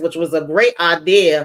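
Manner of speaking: normal talking voice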